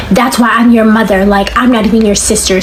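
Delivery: plain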